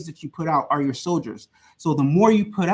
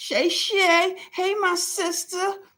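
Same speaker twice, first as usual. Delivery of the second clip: very high, very slow and stretched; 14 semitones higher than usual. Reading out a viewer's comment in an impression of them: imitating a viewer. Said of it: "That's my impression of Craftable Things".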